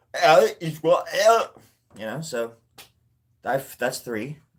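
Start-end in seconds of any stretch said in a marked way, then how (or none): 0.2-1.5 very loud, high Scottish accent. Showing another accent as a language: scottish accent. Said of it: "Scottish should be like".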